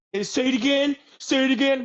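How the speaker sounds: excited yelp, very high, loud, hyped. Mocking a ghost show host reacting to a noise: imitating an excited ghost show host. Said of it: "He's like".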